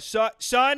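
growing loud, high-pitched voice. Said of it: "he'd get really loud".

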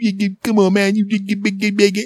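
very high, whiny, nagging tone. Retelling how a guy busy with a game refused to fetch glasses, imitating him whining. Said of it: "he started to sound like he was whining like a punk".

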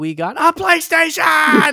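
mock freak-out, very high, loud, squealing excitement. Remembering the sister's reaction to getting a PlayStation, imitating sister freaking out. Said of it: "like freaking out".

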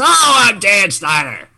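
put-on loud, high-pitched old man voice yelling. Showing how Dan Snyder talks to people: old man yelling voice. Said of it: "Like an old man".

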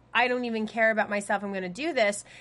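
normal talking voice

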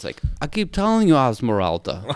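put-on French-like accent. Speaker recalls an actor kid who stayed in his accent, doing a French-sounding accent impression. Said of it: "he sounds like he has got the same accent".

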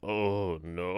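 put-on gravelly, deep voice. Retelling waking up and trying to speak: imitating own gravelly deep voice. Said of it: "a sexy, gravelly, deep voice".

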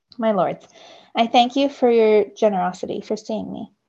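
plain

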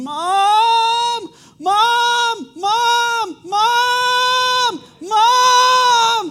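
very high, very loud, shrill, drawn-out screams. Speaker retelling one of her children running through the house, imitating a child screaming.

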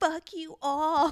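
put-on very loud, high, toddler-tantrum shriek. Recounting what a man screamed at the people around him, retelling a scream. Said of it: "he like screams it".

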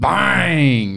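creaky, rough-edged announcer voice, drawn-out bang. Asking a quiz question, imitating the commentator's catchphrase: Mike Breen "Bang" impression. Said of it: "That was my impersonation".

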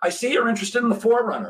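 high, wide-pitched, eager salesman voice.

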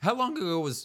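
cracking voice. Asking the other speaker when a movie came out, voice cracking. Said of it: "as my voice cracks on that".

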